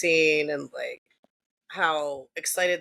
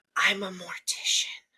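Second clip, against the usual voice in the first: hushed whisper; 2 semitones higher than usual. Retelling what a friend said to her, whispering it. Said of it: "she whispers it at me".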